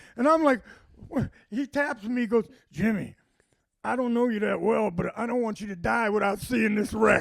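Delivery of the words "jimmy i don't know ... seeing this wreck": put-on raspy voice. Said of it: "He had that raspy voice".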